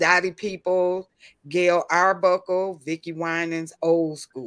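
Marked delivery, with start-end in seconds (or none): none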